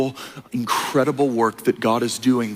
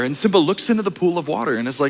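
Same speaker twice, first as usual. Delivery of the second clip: ordinary talk, nothing marked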